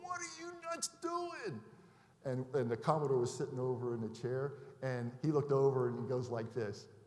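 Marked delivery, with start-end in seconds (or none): 0.0-1.6 put-on, very high-pitched, screamed, furious voice. Retelling how a carrier captain screamed over the phone: imitating someone screaming. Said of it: "screaming at our captain".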